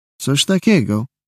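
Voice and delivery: skeptical, doubtful, unconvinced muttering. A policeman answers a man's account of a brawl: muttered doubtfully. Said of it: "mruknął z powątpiewaniem gliniarz".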